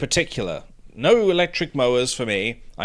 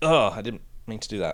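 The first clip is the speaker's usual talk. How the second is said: plain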